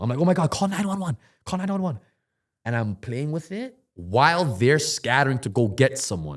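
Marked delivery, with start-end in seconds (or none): 0.2-2.0 panicked, very high-pitched, rattled off. Retelling a knee injury, calling for help: retelling own panic. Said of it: "I'm panicking".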